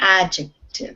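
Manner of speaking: stress on first syllable of the adjective. In a class on parts of speech, stress on first syllable of adjective. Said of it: "the stress is on the beginning of this word".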